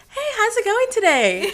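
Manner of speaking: very high, very loud, sing-song voice. Showing the voice used with customers at work, customer service voice. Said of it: "that customer voice".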